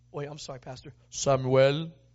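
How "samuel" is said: booming, very loud voice. Telling the story of Samuel being called while in bed, God voice. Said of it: "There's my God voice".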